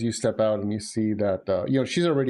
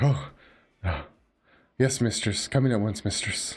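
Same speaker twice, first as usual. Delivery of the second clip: groveling, servile, fawning ghoul voice, eager to please. Voicing a ghoul waking up and answering his mistress: servile ghoul voice. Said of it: "And he's like".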